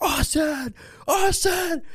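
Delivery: acted-out scream. Recounting calling a buddy after dislocating an arm snowboarding, retelling a scream. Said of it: "I'm screaming like".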